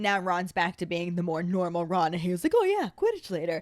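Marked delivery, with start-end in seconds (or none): 2.5-3.6 put-on high, happy, bouncy, cheerful excitement. Retelling Ron cheering up about Quidditch: happy excited voice as Ron. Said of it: "bouncing around happy".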